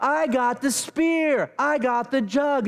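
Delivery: yelling out loudly.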